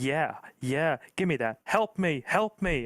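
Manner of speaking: slow, terrible put-on American accent drifting Canadian. Acting out how he would have sounded on the team, in a bad American accent. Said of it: "Excuse my terrible American accent".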